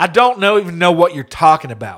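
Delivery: blaring, shrill, as loud as possible. Retelling what a woman in a store said: imitating someone talking loudly. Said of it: "She literally just loud as can be".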